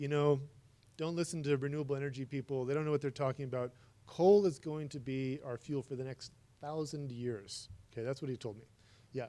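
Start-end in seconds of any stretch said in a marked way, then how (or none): none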